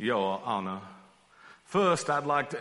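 drawling southern courtroom lawyer voice. Imagining the gospel writer John as a TV trial lawyer, in a southern drawl. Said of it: "with a southern drawl like all great television trial lawyers".

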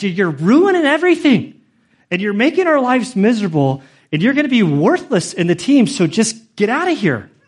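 mock all-out screaming rant, loud, high, swooping. Recounting your own past rant at him, retelling your screaming at him. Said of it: "I'm screaming at him like".

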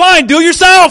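slow angry high-pitched retort. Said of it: "throwing the bottle down and going".

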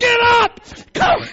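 put-on very high, loud, angry, furious screaming. Retelling yelling at a brother who fell off the bench laughing, acting out furious shouting. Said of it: "And I was just furious".

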